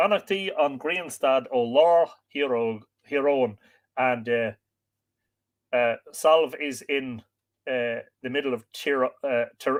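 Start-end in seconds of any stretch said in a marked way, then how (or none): none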